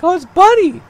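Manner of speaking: extreme, very high, loud falsetto. Recalling seeing bunny rabbits for real, in extreme falsetto. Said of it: "as I go in extreme falsetto there for a second".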